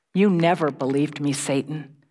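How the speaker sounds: ordinary delivery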